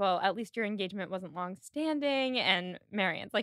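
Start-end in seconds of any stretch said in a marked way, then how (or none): none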